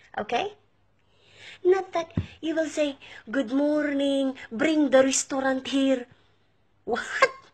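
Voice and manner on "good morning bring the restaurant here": English spoken with a put-on Egyptian accent. Mocking how Egyptians speak English: imitating Egyptian-accented English. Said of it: "tell your Egyptians that they should talk in a proper accent too".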